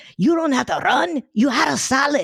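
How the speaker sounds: very high, put-on Latin American accent.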